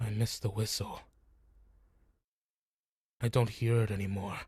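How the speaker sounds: a little solemn voice. Narrating a scene, voicing the thing that shut down, in a slight solemn voice. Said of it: "you hear a slight solemn voice coming from it".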